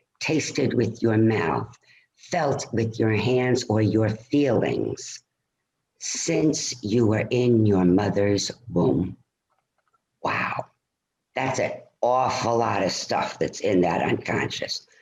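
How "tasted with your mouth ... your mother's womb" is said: very slow, spaced-out delivery. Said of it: "I'm gonna say it very slowly".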